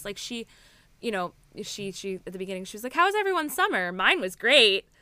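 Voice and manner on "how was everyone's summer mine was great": loud, sarcastic. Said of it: "like, sarcastically".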